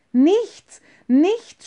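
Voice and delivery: sudden, high, loud outcry, flung out. Emilchen responds to the offer, crying out. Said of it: "schrie Emilchen auf".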